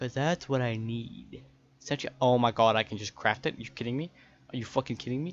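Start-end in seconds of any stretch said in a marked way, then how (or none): 2.7-5.3 mad, fed-up, angry ranting. Finding out the needed item could simply be crafted: mad. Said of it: "I'm so mad".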